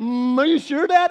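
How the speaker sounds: high, drawn-out, unconvinced, doubtful tone. Retelling how the oldest daughter answered correction: imitating Avery doubting. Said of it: "and she'd be like".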